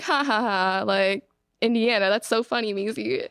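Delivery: amused, laughing, brushing-off tone. Retelling her mom's reaction while she searched for plane tickets: imitating mom laughing. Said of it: "my mom's kind of like laughing about this".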